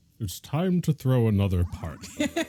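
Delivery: serious narrator voice. Wishing Leonard Nimoy voiced it, the speaker redoes the line as a Leonard Nimoy impression. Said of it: "get Laird Nimoy to do the voice".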